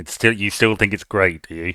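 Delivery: skeptical, doubtful, needling, disapproving tone. Asking another speaker whether they still like their favourite film: skeptical disapproving tone. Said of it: "don't say it in that tone of voice".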